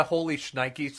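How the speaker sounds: ordinary talk, nothing marked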